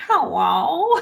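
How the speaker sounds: funny, high, loud little dinosaur-puppet voice. Recalling a little dinosaur puppet on screen saying hello: funny dinosaur-puppet voice. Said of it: "with that funny voice".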